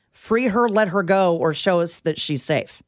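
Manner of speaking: ordinary delivery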